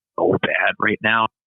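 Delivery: hushed voice. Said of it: "we gotta whisper that".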